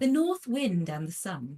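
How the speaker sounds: extremely posh English accent, audiobook narrator style. Showing a posh reading after being asked to try: posh English accent. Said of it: "it's as posh as I can go".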